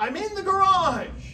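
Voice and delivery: loud, high-pitched shouted call. Retelling how he yelled up from the garage: imitating a yell. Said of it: "he yells up".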